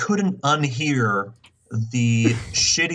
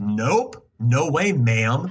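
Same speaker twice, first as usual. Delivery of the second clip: aggressive, snapping delivery. Retelling a man scolding a lady who cut in line: imitating an aggressive retort. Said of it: "getting aggressive with her".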